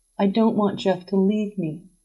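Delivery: plain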